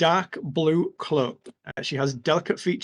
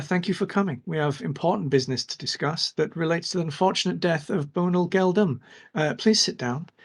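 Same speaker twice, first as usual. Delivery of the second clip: gentle but clear, mild voice. Narrating for the players, a woman greets them in a soft but clear voice. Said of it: "she says in a soft but clear voice".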